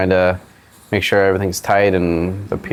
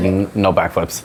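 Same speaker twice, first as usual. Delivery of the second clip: ordinary talk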